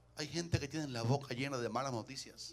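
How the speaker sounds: very soft, hushed, very quiet low-volume voice. Preacher speaking to his congregation, saying this part quietly. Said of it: "Lo voy a decir bajito ahora".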